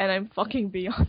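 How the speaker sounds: ordinary talk, nothing marked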